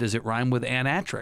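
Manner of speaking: ordinary talk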